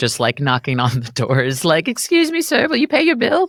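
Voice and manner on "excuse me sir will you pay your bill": very high, meek, sweet voice. Picturing a ten-year-old collecting checks at doors: Oliver Twist style plea. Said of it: "in some Oliver Twist getup".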